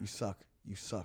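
mock muttering under breath. Retelling a man who stared at him during his hosting set; imitating muttering under breath. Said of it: "Like under his breath".

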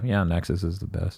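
put-on smugness. Speaker acting out how they talk about Armored Core right now, mock-smug.

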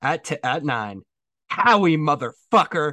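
loud, slow, drawn-out, thrilled enthusiastic exclamation. Doing an impression of Greg Rosenthal exclaiming enthusiastically on a podcast drop. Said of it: "I'm gonna do my best impression here".

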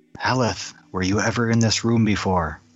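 hushed whisper. Asking a companion about the room in secret: whispering. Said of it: "quietly whisper out".

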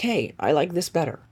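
normal talking voice

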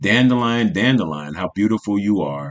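ordinary delivery

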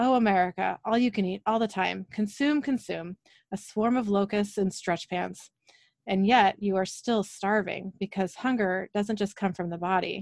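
ordinary delivery

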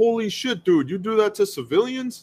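high-pitched, astonished, amazed bro voice.

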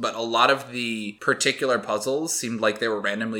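ordinary talk

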